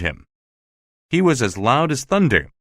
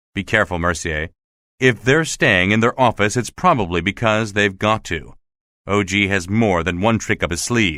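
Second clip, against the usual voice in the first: plain reading voice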